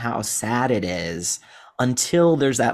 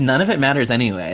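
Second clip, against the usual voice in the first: usual speaking voice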